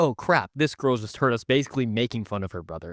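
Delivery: normal talking voice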